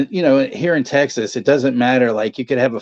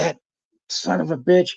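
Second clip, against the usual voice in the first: seething, rough, furious cursing; 4 semitones higher, 3 dB quieter than usual. Retelling the speaker's mom's reaction to another driver, imitating a furious mom. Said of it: "my mom's just furious".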